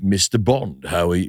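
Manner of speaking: low British villain accent. Mocking how movies cast British villains, British Bond villain voice. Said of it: "you can have a British Bond villain".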